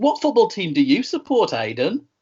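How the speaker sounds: strong Birmingham accent. Asking another speaker which football team he supports: extremely Brummie accent. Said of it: "You went extremely brummy when you said that sentence".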